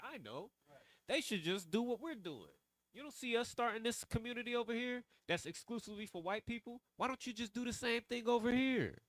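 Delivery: very high, sudden realization voice. Mocking what a man said in a video; mock sudden realization. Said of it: "like he just had an idea".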